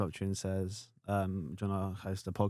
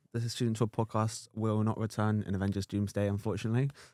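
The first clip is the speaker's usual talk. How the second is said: plain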